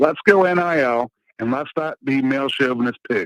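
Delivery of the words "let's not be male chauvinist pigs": ordinary talk, nothing marked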